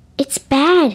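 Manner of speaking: hushed whisper. Narrator reads a boy showing a word to his friends at recess, whispered. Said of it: "he whispered".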